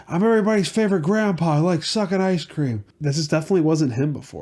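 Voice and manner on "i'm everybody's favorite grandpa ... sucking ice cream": odd, weird, creepy voice, pitched up. Imitating how a politician talks: weird creepy Joe Biden voice. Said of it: "he does this weird, like, creepy".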